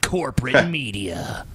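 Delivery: snarling, sneering delivery. Imitating how the other speaker said a phrase: imitating a snarly tone. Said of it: "you said it very snarly".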